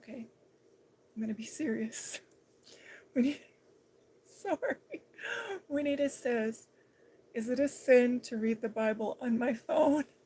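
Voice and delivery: loud, swooping voice, barely stifling laughter. Reading out a question, trying not to laugh. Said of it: "I'm trying not to laugh".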